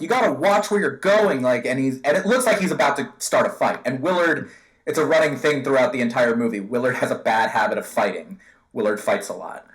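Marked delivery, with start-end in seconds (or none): 0.0-1.4 put-on heated, high, combative angry yell. Recounting a movie scene, the speaker acts out one character yelling at another. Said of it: "yelling at him".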